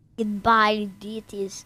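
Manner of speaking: low, put-on Russian accent. Offering to say the show's goodbye line in Russian, the speaker does a Russian accent. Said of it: "say goodbye duties in Russian".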